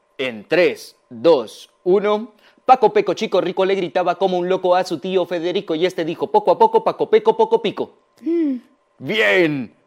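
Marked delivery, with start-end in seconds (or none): 2.7-8.0 faster, quick speech. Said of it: "Lo voy a decir ahora más rápido".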